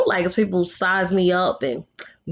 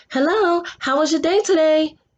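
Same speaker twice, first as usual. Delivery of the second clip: fake put-on voice, very high, phony polite; 9 semitones higher than usual. Showing how a put-on work voice sounds: put-on phony voice. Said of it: "me putting on a phony voice like".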